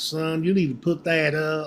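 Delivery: put-on Southern accent, Florida style. Imitating how people talk down in Florida: Southern Florida accent. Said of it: "they start talking like this".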